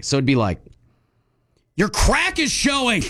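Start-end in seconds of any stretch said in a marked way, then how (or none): 1.8-3.0 angry delivery with very high pitch. Showing a partner how in a say-it-in-a-tone game: angry tone. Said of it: "You have to say it angry".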